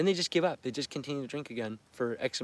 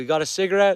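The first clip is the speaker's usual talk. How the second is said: put-on drunken female voice, higher and louder; 5 semitones higher, 7 dB louder than usual. Retelling meeting a mother who came in drunk: imitating a drunk woman. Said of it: "and she is drunk".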